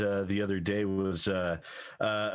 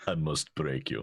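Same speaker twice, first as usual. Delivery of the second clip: put-on low Russian accent; 6 semitones lower than usual. Joking about a rival being trained to fight: imitating the Russian from Rocky. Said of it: "It's like the Russian".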